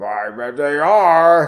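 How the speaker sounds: growly, growled, growling voice. Reading a story aloud, voicing a character's growled reply in a growly voice. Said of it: "Is that growly?".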